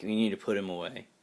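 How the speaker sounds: mock cynical tone of voice. Retelling what the lady next door says about him: imitating someone's cynical tone. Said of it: "she says it with just all the cynicism you could ever muster".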